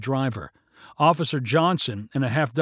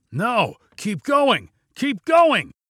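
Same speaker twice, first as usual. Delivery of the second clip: frantic, very high yell, rising in pitch; 9 semitones higher, 4 dB louder than usual. A carjacker, seeing a police car trail the truck, yells frantically at the driver. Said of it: "the carjacker yelled frantically".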